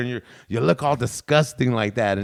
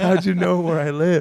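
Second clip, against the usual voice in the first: scared, uneasy, high-pitched frightened voice; 5 semitones higher than usual. Retelling a prank call target's reply: imitating someone scared. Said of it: "then he started getting scared".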